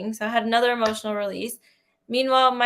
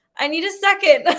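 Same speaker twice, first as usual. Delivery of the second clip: put-on crying, higher and louder; 7 semitones higher, 6 dB louder than usual. Retelling what she said to her mom while crying: retelling her own crying. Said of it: "And then I'm crying".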